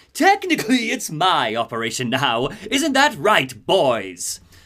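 cackling villain voice. Game narrator voicing the villain revealed to Batman, Joker cackling. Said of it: "Joker cackles in Troy Baker's voice".

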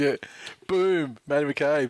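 showy, high-pitched, self-satisfied, self-important tone. Retelling a self-absorbed man introducing himself as a joke: imitating Matty McCabe, self-important. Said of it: "he goes".

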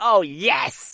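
high, thrilled, excited little squeal. Recapping a game show, imitating Claudia squealing. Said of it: "she's squealing".

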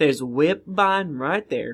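put-on Southern accent. Recapping the last session for the group in a put-on Southern accent. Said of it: "Are you trying to do Southern accent?".

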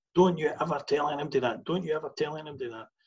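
play-acted, high calling out across a distance. Retelling how he shouted across the hall: imitating someone shouting. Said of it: "he shouted across the hall".

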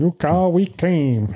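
mock American hillbilly voice, pitched high. Showing how the line would sound with an american accent, american hillbilly accent. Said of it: "If it's an American accent".

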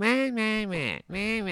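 put-on nasal talk. Mocking the man you hate most, imitating his nasal voice. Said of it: "his voice is coming straight out of his nose".

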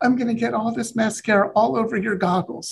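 mock crying voice, very high and tearful. Retelling her reaction to seeing her house in virtual reality: imitating someone crying. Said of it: "'cause she's crying".

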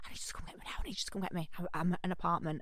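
urgent, hushed whisper, very quiet, barely voiced. Retelling a friend's early morning phone call: imitating a whisper. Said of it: "she was whispering".

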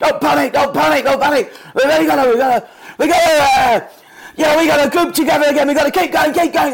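very high, loud panicky fussing babble. Retelling a teammate panicking during a match: panicky Corporal Jones impression. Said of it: "Corporal Jones in Dad's Army".

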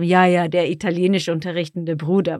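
light, teasing, mildly sarcastic joking tone. Showing how a german phrase sounds with a bit of sarcasm: slightly joking sarcasm. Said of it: "if we use a bit of sarcasm".

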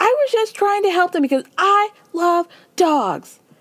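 high, screaming voice. Retell how Lisa starts getting up and answers back, imitating Lisa screaming. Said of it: "Lisa starts getting up and screaming".

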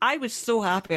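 plain

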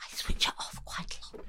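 playful, very quiet delivery. Confiding something the professor next to them shouldn't hear: playfully saying it very quietly. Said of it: "I'm gonna say this very, very quietly".

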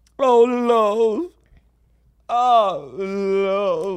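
put-on high, loud, frightened elderly northern woman voice. Trying out accents with others, as a scared old northern woman. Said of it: "like an old, like, northern woman that she's really scared".

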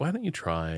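compassionate voice. Demonstrating what a therapist might say, compassionate voice. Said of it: "in a compassionate voice".

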